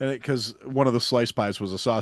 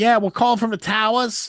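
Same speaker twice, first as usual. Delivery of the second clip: put-on New York accent, very high pitch; 11 semitones higher, 4 dB louder than usual. Retelling phone calls from students at a pizza place: imitating a New York accent. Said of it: "you'd hear a New York accent".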